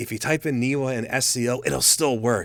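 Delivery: hushed voice. Speaking just between us to the other person, in a lowered voice. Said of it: "I'm lowering my voice so no one".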